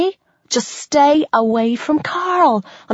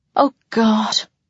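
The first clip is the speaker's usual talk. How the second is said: breathless, out of breath, lower pitch; 4 semitones lower than usual. A narrator reads a freaked-out woman crying out to Daniel, breathless.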